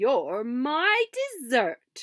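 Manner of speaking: loud, beastly growling wolf voice. The wolf answers Little Red's plea, growling like a wolf. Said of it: "growled the wolf".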